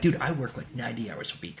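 put-on very quiet, hushed, proud, boastful tone. Retelling answering a doctor's question; retelling a proud announcement. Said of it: "I proudly announced".

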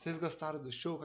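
soft, gentle, very sugary sweet voice. Retelling a performer asking the crowd about the show, imitating a very sweet voice. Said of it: "Aquela voz aí bem doce".

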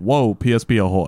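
ordinary talk, nothing marked

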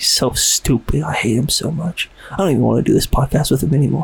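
quiet, hushed voice. Talking to listeners about a co-host who can't hear: speaking quietly. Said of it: "I'm speaking so quietly".

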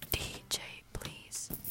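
slow, urgent, hushed whisper.

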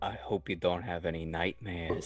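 hushed whisper. Speaking into another character's mind during the game, whispering. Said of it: "And I'll whisper uh".

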